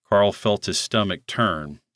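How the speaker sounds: plain reading voice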